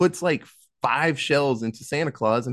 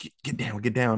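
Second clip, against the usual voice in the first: put-on whispering; 3 semitones lower, 4 dB quieter than usual. Imagining being woken up at night by Katie: imitating a whisper. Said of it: "was whispering and was like".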